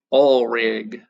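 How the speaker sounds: Texan accent. Repeating a memory phrase for oxidation and reduction: texan accent. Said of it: "gotta say it like a Texan".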